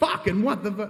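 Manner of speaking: high, sudden, shocked outburst. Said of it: "you launch".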